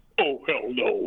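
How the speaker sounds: deep voice dropped way down low. Retelling how Tony Todd turned down a ghost hunt: imitating Tony Todd's deep voice. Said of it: "he's got a real deep voice".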